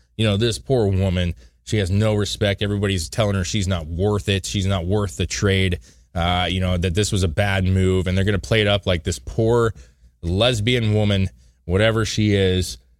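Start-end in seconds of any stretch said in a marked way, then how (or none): none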